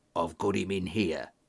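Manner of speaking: strangely excited, low half-whisper. The train guard comes out of the narrator's office and closes the door: excited half-whisper. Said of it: "he whispered in a strangely excited voice".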